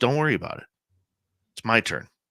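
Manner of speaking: mock self-assured tone. Retelling what a late nephew said to an uncle: imitating a confident nephew. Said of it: "very confidently".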